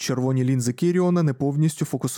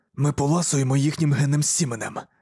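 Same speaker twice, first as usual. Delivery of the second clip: usual speaking voice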